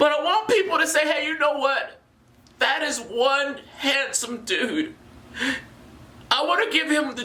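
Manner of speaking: moved and getting emotional, voice rising high. Speaking directly to listeners, admitting to getting a little emotional. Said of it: "I'm getting a little emotional".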